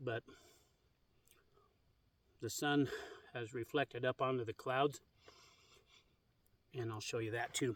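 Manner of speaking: speaking with mouth full. Filming the sky on a low battery, talking while chewing. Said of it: "I'm still chewing on my steak".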